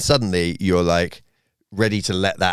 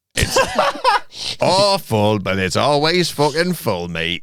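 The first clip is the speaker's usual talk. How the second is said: put-on local farmer voice with Somerset accent; 7 semitones higher than usual. Saying a joke tagline for the club in a put-on local accent. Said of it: "And that's the local accent".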